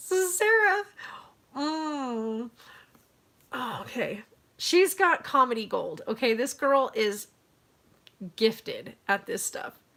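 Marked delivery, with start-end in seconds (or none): 0.0-6.0 slow, giggling, laughing through the words. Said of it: "I can't even say it without laughing".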